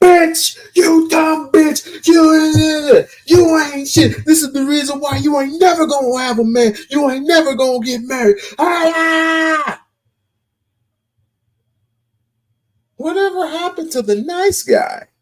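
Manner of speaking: mock very high, overwrought emotional tirade. Acting out a rejected man's reply to a woman: mock emotional outburst. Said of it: "very emotional".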